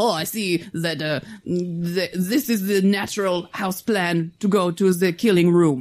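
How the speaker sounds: slow, drawled, bad Quebec accent. Retelling a scene where Depp goes straight to the room: Depp's bad Quebec accent. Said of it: "with his bad Quebec accent".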